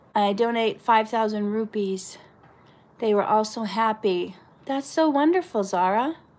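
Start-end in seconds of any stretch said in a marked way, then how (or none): none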